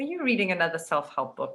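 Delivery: mock disdainful, dismissive, scornful tone. Retelling her husband's reaction to her reading: imitating husband's scornful question. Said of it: "my husband's like".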